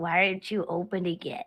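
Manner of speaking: stage half-whisper. Playing a tabletop game, a character holds someone by the hair, half-whispering in his ear. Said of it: "I'm whispering in his ear".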